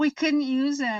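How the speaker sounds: high-pitched, mad, griping angry voice. Retelling how he reacted to the blinker shot: imitating mad Sherman. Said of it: "Sherman was so mad".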